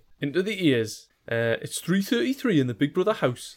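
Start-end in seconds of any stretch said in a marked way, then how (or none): 1.6-3.6 broad Newcastle Geordie accent, pitched up. Warming up before a reading, getting back into the Geordie accent. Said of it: "That's the way I get into the Geordie accent".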